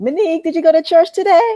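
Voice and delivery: put-on Caribbean accent, very high. The speaker recalls her mom calling her, imitating mom's Caribbean accent. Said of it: "my her accent comes out".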